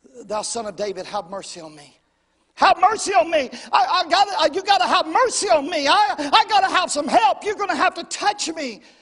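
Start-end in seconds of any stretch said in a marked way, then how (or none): 2.6-8.8 loud crying-out scream climbing in pitch. Retelling how a man cried out as Jesus came into Jericho, retelling a scream. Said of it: "He begins to scream".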